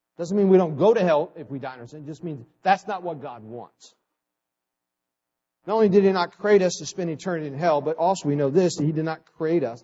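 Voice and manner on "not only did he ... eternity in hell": rushed, fast, preaching tone. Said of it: "I'm talking fast".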